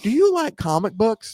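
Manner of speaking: high-pitched TV infomercial sales pitch announcer voice. Reading a comic ad aloud, performing it as an infomercial. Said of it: "I'm going to try to read this as an infomercial".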